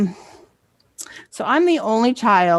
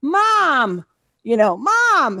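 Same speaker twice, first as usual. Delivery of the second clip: high, slow, drawn-out desperate calling.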